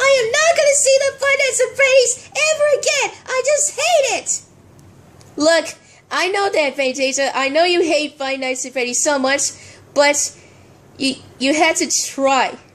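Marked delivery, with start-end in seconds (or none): 0.0-4.4 very high-pitched, shrill shouting. In a scene, one character shouting at another. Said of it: "you don't have to shout at me like that".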